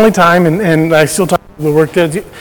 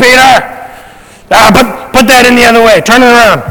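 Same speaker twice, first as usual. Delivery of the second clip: put-on yelling, louder and higher pitched; 4 semitones higher, 5 dB louder than usual. Retelling a man touchy about equipment yelling down at him, retelling a yell. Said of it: "and he yells down".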